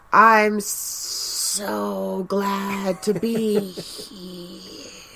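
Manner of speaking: very slow, drawn-out, gravelly, rough cartoon villain voice. Criticizing how the villains talk, a speaker imitates the Witch King, cartoony. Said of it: "very cartoony".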